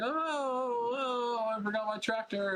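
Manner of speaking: very high, slow cry with the long, dragged oh. Retelling a scene where a character flies off after a punch: imitating Goku. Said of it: "he's like".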